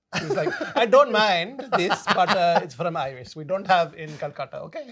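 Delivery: put-on very loud, belted-out Indian accent. Retelling what an older woman said, the speaker does her calcutta accent impression. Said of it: "I'm allowed to do the accent".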